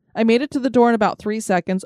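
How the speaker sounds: normal talking voice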